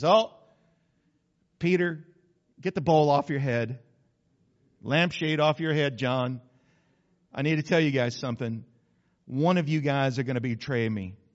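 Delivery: casual, unbothered, offhand nonchalant voice. Speaker retelling Jesus telling his disciples one will betray him, mock-nonchalant. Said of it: "He just said it all nonchalant".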